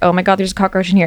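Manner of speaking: put-on crying voice. Retelling a phone call to a friend about a cockroach: imitating own past crying. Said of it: "I'm crying on the phone".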